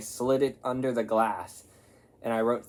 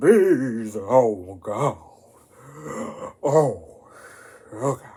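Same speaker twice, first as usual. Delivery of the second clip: very slow, loud, drawn-out fake drunk voice; 5 dB louder than usual. Speaker showing the voice he always does when he tries to act drunk. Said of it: "I always do a voice that's like".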